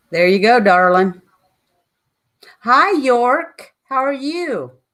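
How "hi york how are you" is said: loud, high, drawn-out near-scream. Greeting a viewer who just joined the chat: loud, almost screaming. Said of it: "Sound like I'm screaming".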